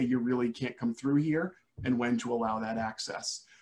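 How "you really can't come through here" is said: ordinary talk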